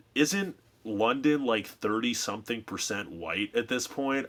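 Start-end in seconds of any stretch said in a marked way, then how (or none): none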